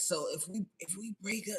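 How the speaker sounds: gentle, soft-spoken, quiet, soft voice. Retelling how a groom questioned the prenup before the wedding: imitating his soft voice. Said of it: "with his soft voice".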